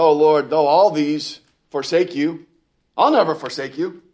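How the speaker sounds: loud, puffed-up, boastful, swaggering bravado. Retelling the vow of the man who took his eyes off Jesus, with mock boastful bravado. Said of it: "You can just hear the hoo-hoo, right, in his voice".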